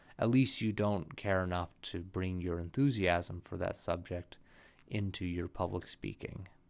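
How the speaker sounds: low, flat monotone, same pitch and speed throughout. Showing what monotone speaking sounds like while explaining it: monotone. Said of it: "let me show you what monotone speaking is like".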